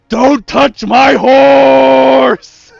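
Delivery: raw, rough bellowing scream, very loud and slow. Friends riffing on what a character has to scream: screaming. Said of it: "What he has to scream is".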